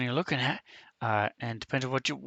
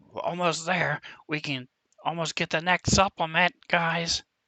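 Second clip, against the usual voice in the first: loud yelling call; 4 semitones higher, 4 dB louder than usual. Voicing a character calling back after selling a potion: yelling back. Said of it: "and she s-, yells back".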